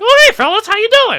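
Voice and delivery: very high, very loud slapstick holler. Retelling a slapstick scene, doing Curly: Curly impression. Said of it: "And then Curly comes in and he's like".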